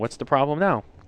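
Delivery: ordinary delivery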